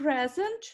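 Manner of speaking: "present" with first syllable "pre" stressed. Teacher models a noun example for the class, stress on first syllable of present. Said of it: "in nouns, the stress is on the first syllable".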